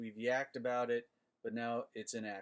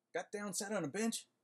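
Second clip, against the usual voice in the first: fast, rushed, pitched-up rattle like a tongue twister; 9 semitones higher than usual. Showing the other speaker how the tongue twister goes, said fast. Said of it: "Just say it fast".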